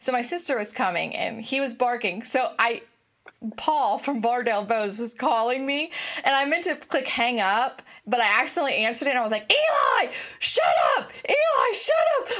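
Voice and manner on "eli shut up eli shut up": very high, drawn-out screaming. Speaker retells accidentally answering a phone call while yelling at her barking dog: retelling yelling at a dog. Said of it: "Like yelling at this dog".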